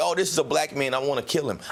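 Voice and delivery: ordinary talk, nothing marked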